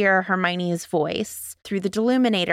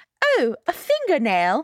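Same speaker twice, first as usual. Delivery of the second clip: put-on British accent, pitched up higher; 8 semitones higher than usual. Retelling a book scene, quoting Hermione again: Hermione in a British accent. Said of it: "should I have done my British accent?".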